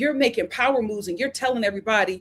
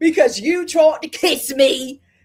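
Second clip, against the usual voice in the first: bad put-on Irish accent, higher and louder; 5 semitones higher, 5 dB louder than usual. Retelling a reality show argument, quoting Maura: bad Irish accent. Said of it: "that is not an Irish accent".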